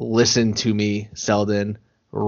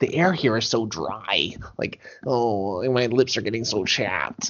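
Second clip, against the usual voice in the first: put-on New York accent; 6 dB quieter than usual. Retelling a South Park scene, quoting the cousin visiting Colorado: imitating Kyle's cousin Kyle.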